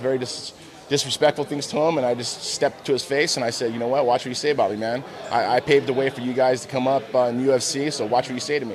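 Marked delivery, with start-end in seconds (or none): none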